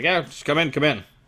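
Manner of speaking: rough dwarvish voice. Game narrator voicing someone answering a knock at the door, gruff dwarvish voice. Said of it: "a gruff dwarvish voice".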